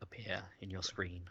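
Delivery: soft, unvoiced whisper.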